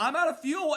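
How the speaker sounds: loud high-pitched scream. Retelling a driver's call near the end of the race: imitating a driver screaming. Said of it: "Tyler Reddick screamed".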